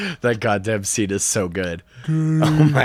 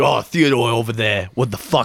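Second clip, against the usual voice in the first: heavy, thick, broad Brooklyn accent. Riffing on the movie, the speaker voices Alvin in a thick Brooklyn accent. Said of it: "thick Brooklyn accent".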